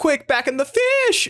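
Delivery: very high delivery, voice breaking and cracking way up. Retelling a film line as a Shaggy from Scooby-Doo line read. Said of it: "it's a Shaggy from Scooby-Doo line read".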